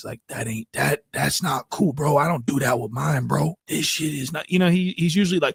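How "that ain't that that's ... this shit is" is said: mock scared, whimpering voice. Mocking someone who sounds scared in a clip: imitating Whack Three Fingers sounding scared. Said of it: "He sounds so whimpery and so scared".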